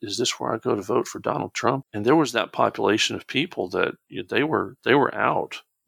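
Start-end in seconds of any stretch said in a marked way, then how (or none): 0.0-1.8 put-on sheepish, confused, lost old lady voice. Speaker recalls a little old lady asking where to vote, imitating a sheepish, lost voice. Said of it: "in just a very sheepish, very, I don't know where I am tone of voice".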